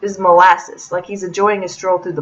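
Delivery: ordinary delivery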